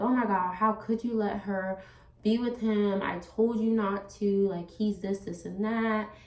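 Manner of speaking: crying, tearful outburst, words spilling out. Retelling confronting someone about letting her daughter go: imitating own past crying. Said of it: "so I started crying".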